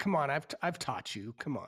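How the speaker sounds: put-on angry voice. Retelling another player's scolding, imitating Rob's angry voice. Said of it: "I love the anger in Rob's voice".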